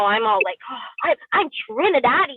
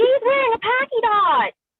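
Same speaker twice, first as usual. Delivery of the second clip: shrill, very high, drawn-out, accusing scream; 12 semitones higher than usual. Retelling how a little boy in class screamed at her: imitating a boy screaming. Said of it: "screamed at the top of his lungs".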